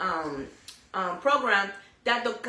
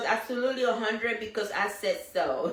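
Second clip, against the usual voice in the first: ordinary delivery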